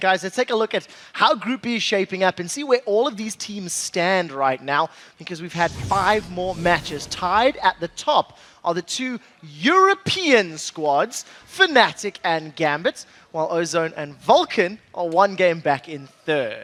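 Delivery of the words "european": European stressed heavily, hammered hard. A caster reads out the group standings; stress on 'European'. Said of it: "I didn't think that you could put more emphasis on a word".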